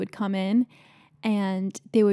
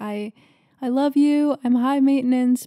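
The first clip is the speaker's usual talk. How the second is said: loud, acted-out, hollered catcalling yell; 4 semitones higher, 5 dB louder than usual. Retelling what a woman yelled at a soccer player, imitating someone yelling. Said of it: "she was like yelling".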